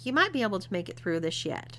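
ordinary delivery

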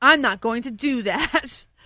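firm, stern, flat delivery. Retelling refusing a stranger who asked for cash, acting out saying it sternly. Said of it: "I said it really sternly".

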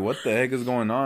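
plain

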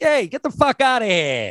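put-on New York gangster voice, very high and swooping. Demonstrating how to fire someone while talking like a new york gangster. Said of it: "or a New York gangster".

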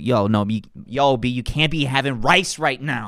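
put-on strong New York accent. Speaker imitating guys from Queens who fight about carbs, thick New York accent. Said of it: "these thick New York accents".

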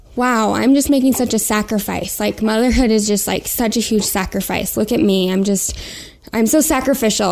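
ordinary delivery

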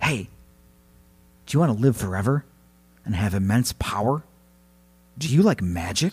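secretive, soft, hushed half-whisper. Retelling a folk tale, voicing the trapped spirit tempting a woman: half-whispering as Basil. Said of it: "and he whispered to her".

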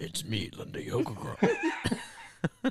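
very slow, pitch-shifted disguised voice. Acting out an anonymous podcast guest hiding her identity: pitch-shifted disguised voice. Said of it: "we have to, like, pitch her voice".

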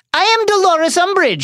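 frightened, terrified, very high-pitched voice. Narrator reads Umbridge announcing herself to the centaurs, high-pitched terrified Umbridge voice. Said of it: "said Umbridge in a high-pitched, terrified voice".

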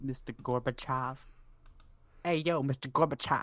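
casual, tried-on put-on New Jersey accent. Joking about the name Gorbachev, saying it in a New Jersey accent. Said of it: "I was trying to have like a New Jersey accent".

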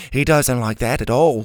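plain reading voice

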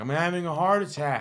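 high, mild, half-screamed outburst. Speaker retells a woman screaming after she hit him: imitating someone screaming. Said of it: "she starts screaming. She's like".

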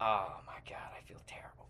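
soft, embarrassed whisper.

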